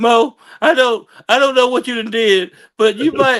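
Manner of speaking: high, loud, weepy and blubbering crying voice. Retelling a phone call from the booker: imitating someone crying. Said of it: "He's literally crying".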